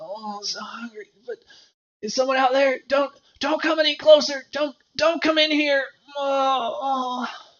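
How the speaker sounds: high, pathetic, forlorn, pitiful voice. Calling out from inside a cave to people outside: pitiful voice. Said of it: "you hear a rather pitiful sounding voice".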